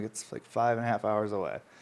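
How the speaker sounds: ordinary talk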